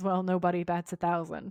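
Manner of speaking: ordinary delivery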